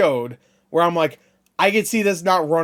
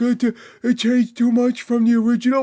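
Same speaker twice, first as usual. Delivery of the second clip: higher, dim-witted, dopey stupid-guy voice; 7 semitones higher than usual. Mocking people who said a game changed too much: stupid guy voice. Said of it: "I'm making the stupid guy voice".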